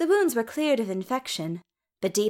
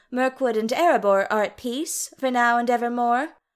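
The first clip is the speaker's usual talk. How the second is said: plain reading voice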